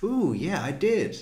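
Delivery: bouncy, pleased, sing-song little voice. Retelling a juror's pleased reply: imitating a bouncy pleased reply. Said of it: "It's all very".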